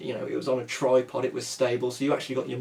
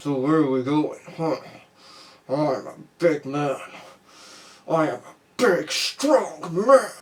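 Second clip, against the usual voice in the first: slow, stiff voice spoken with clenched jaw; 3 semitones higher, 4 dB louder than usual. Imitating Lundgren, who sounds like his jaw is glued: clenched-jaw Lundgren voice. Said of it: "sounds like his jaw has been glued together".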